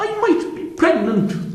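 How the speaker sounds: high, slow mock Irish accent.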